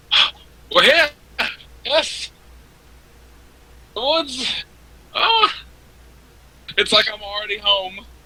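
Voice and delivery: exclaiming in a very high voice. Narrating the cart entering the forest, speak as Master Tyrell: Master Tyrell voice. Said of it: "And he looks out and he's like".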